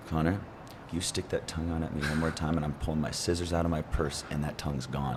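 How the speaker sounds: put-on whisper through unmoving lips. Telling a story about a woman in church threatening him, retelling a whisper through unmoving lips. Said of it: "she just whispers, and her mouth isn't even moving".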